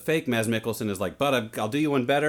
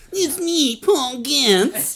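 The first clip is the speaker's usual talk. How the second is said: very high, very slow, loud, drawn-out drawl; 14 semitones higher, 6 dB louder than usual. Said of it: "It's getting better".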